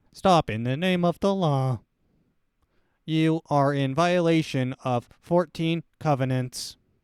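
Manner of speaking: very loud, booming, mechanical robot voice. Imagining a robot dog coming up to someone, speaking in a robot voice. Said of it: "It has a robot voice".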